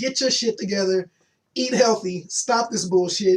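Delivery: ordinary talk, nothing marked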